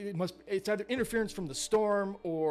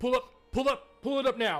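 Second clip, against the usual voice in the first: loud, high-pitched shouting; 5 semitones higher, 3 dB louder than usual. Player retelling a game character yelling orders to someone else, retelling a yelled order. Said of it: "he like yells to like someone else".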